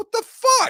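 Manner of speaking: furious disbelief, very high. Retelling own reaction to being uninvited: re-enacting own livid outburst. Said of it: "And I said it like that".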